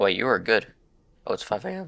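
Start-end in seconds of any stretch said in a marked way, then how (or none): 1.3-1.9 voice breaking mid-line, cracking and pitched-up. Reacting to the clock reaching five A M in a game: voice cracking. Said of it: "Oh, boy, voice crack".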